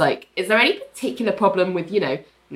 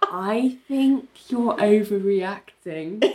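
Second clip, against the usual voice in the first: put-on very slow talking; 2 semitones higher than usual. Retelling a story, the speaker quotes a woman answering a panicked man, imitating really slow speech. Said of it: "she says this really slowly as though she's talking to like a psychiatric patient".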